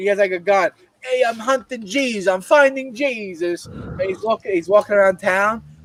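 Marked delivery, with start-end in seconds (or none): 1.0-3.7 put-on Italian mobster voice, higher, slower. Describing a funny video of a man playing a mafioso, imitating italian mobster. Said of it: "playing like a like a Dago fucking uh, mafioso".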